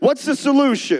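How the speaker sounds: loud, high shouted call.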